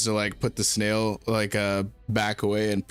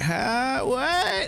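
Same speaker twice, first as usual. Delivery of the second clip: put-on very high-pitched old granny voice. Retelling who answers on the other end of the call, in an old granny voice. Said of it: "an old granny voice going like".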